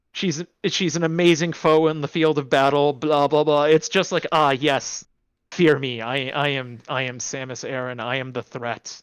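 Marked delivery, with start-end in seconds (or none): 4.3-9.0 put-on boastful woman's voice, much lower, slower. Mocking characters who flatter Samus Aran's ego, voicing her reply: mock-boastful Samus Aran voice. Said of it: "they're massaging her ego".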